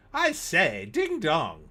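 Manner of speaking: animated British voice with big, swooping pitch swings. Reading out a viewer's advert pitch, a Brit exclaiming: Leslie Phillips voice. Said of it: "in his best Leslie Phillips voice".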